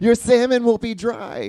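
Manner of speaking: shrill, very high screaming. Retelling watching cooking shows at home: imitating own screaming at the TV. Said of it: "I'm just sitting there screaming at the T V".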